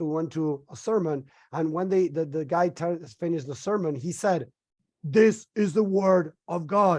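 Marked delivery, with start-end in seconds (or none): 5.0-7.0 slow, commanding, authoritarian tone leaving no room for doubt. Retelling what the man said after the sermon: imitating an authoritarian tone. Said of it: "he says it in such an authoritarian way".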